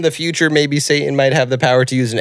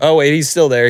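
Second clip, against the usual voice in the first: ordinary delivery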